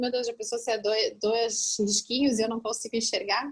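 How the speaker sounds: normal talking voice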